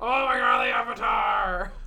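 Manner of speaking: put-on high, loud, slow shout.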